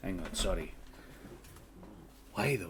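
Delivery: voice dropped to a hushed whisper. Voicing a character in a scene being told: lowered voice. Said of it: "lowers his voice".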